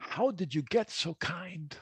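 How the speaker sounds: very garbled, high speech. Recalling what they said to the kind emergency room doctor, retelling a very garbled voice. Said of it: "in a very garbled voice".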